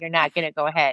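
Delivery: each word plainly spelled out, very clear and serious. Retelling blocking a passenger from getting off the plane: imitating own very clear warning. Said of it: "very clearly".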